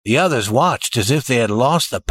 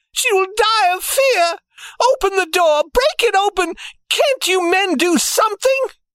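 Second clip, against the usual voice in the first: very high-pitched, appealing crying out. A mother whose child is trapped inside a safe begs the men, crying out. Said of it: "her mother cried".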